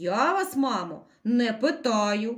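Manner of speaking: low, slow, stern, angry tone. Narrator reads a school director turning to a hare's mother, angry. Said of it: "сердито обернувся до неї директор".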